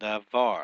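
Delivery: "Davar" said with stress on final syllable "-var". Teaching Hebrew word stress using Davar: stress on var of Davar. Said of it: "the stress or the force of the pronunciation falls on the last syllable".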